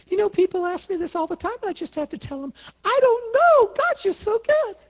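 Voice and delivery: tiny, very high-pitched little voice. Retelling Elaine's answer when asked how she got her healing: little tiny voice. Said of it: "this is what she said in her little tiny voice".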